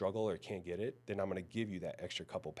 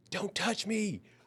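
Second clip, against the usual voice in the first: put-on yell, very high and loud, filling the room; 13 semitones higher, 6 dB louder than usual. Retelling how a client yelled across the gym: imitating a client yelling. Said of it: "he yelled in the whole gym".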